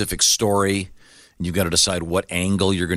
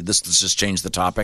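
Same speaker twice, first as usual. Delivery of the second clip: usual speaking voice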